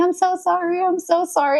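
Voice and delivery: very high, pleading apologetic voice. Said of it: "She's like".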